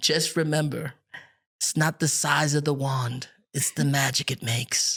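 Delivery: storybook-style pirate captain voice. Retelling what a man said to him, Captain Hook voice. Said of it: "in Captain Hook voice".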